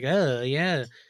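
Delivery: put-on nerdy voice. Describing a comedian's joke, imitating him: Joe Zimmerman nerdy voice. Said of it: "kind of a nerdy voice".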